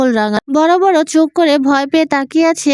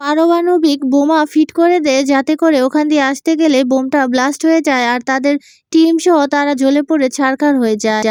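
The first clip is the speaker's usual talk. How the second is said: ordinary delivery, nothing marked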